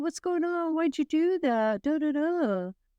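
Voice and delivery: high, put-on confrontational voice. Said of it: "Did it sound just like that?".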